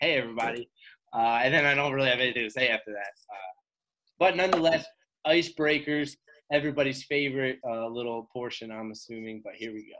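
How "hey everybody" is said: pumped-up, energetic hype-video intro delivery. Showing how emails starting with the greeting sound: imitating Taekwon's hype-video greeting. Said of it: "it's always said in that tone".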